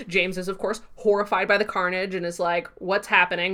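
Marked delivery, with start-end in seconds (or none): none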